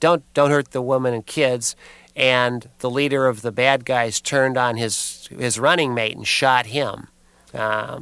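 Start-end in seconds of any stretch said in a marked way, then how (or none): none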